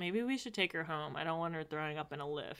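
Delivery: quiet, hushed half-whisper. Retelling a scene where Tess speaks to Shane: Tess half-whispering. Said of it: "Tess whispers to Shane".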